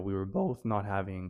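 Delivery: voice breaking, cracking. Apologizing for rambling while telling a story; voice cracking. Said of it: "I don't know why I voice cracked there".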